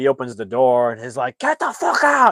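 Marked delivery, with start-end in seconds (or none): 1.4-2.3 very high, shrill, loud shouted yell. Retelling how the little russian opened the door on the neighbor; retelling a yell. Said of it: "just yells at the neighbor".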